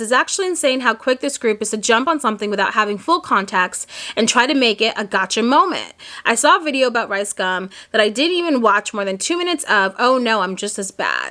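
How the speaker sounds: ordinary delivery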